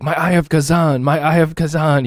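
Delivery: mock worked-up, high, drawn-out excited yell. Gamer retelling what a friend shouted during a group run, retelling an excited yell. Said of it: "He's like yelling".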